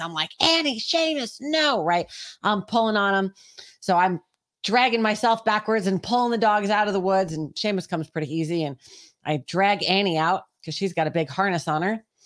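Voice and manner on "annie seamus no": play-acted, very high, full-throated top-of-lungs yell. Retelling pulling the dogs back out of the woods, the speaker recalls: retelling a top-of-lungs scream. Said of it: "I'm screaming at the top of my lungs".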